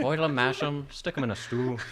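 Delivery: put-on Irish accent. Asked to show off accents, a speaker does an irish accent. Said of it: "Sam loves my Irish".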